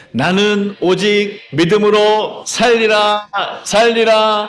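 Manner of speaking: loud, high, slow rallying shout in unison.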